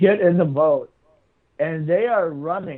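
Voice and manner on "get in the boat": plain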